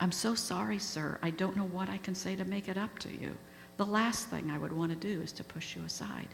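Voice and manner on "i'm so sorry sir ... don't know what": plain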